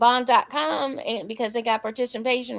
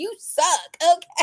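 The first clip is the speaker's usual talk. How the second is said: harsh, brutally blunt, aggressive, pitched up; 7 semitones higher than usual. Retelling how he used to talk: imitating blunt, aggressive delivery. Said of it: "just come out and say it".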